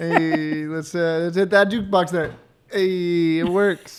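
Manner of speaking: slow, drawn-out, unhurried, laid-back character voice. Joking in a voice the others call Fonzie: Fonzie impression. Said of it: "Not Fonzie".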